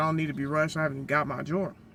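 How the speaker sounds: ordinary talk, nothing marked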